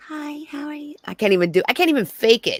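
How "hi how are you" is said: soft, gentle, mild voice, pitched up. A speaker wishing for a softer voice tries one out: soft gentle voice. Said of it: "I wish I had a softer voice so it could be like".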